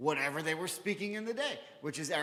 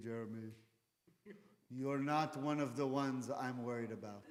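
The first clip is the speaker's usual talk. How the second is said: put-on British Israeli accent with a lilt; 4 semitones lower, 4 dB quieter than usual. Recalling what his former teacher said to him in class, imitating British Israeli accent. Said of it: "He had like a British Israeli accent".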